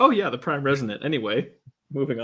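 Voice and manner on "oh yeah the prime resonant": offhand, breezy, casually dismissive know-it-all aside. Retelling how he casually drops a term: imitating offhand know-it-all. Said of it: "He's just like".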